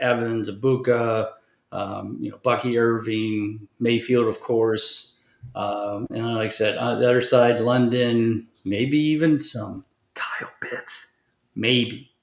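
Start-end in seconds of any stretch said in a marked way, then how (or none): 8.6-12.0 conspiratorial, hedging half-whispered aside. Naming a risky fantasy pick in a game preview: half-whispering. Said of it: "that's why I had to whisper it".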